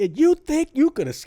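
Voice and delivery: mock angry, very high-pitched jeering voice. Retelling a villain's line from a horror movie: imitating Micah pissed off. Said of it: "Even when he's winning, he's pissed off".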